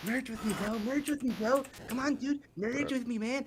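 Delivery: put-on child's voice. Acting out a kid inside someone's head urging him to merge: kid's voice inside his head. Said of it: "a kid inside of his head going".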